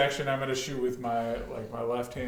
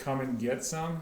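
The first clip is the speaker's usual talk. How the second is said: ordinary talk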